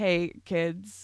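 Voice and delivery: pretend hungover voice. Retelling a skit as a teacher addressing kids: acting hungover. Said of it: "trying to give the impression that I was hungover".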